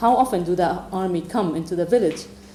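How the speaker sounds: ordinary talk, nothing marked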